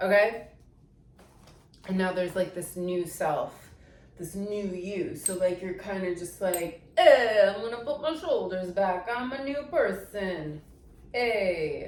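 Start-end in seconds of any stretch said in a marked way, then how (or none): 7.0-11.9 put-on Italian American accent. Describing becoming a new self, speaker tries out an Italian American accent. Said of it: "Italian American, like, that's my new self".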